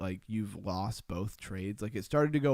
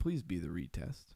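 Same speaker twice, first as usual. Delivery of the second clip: soft, desperate, begging, pleading voice; 3 semitones lower, 5 dB quieter than usual. Watching a trading chart, the speaker retells their own plea to it: mock-begging a chart. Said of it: "You ever beg a chart for mercy?".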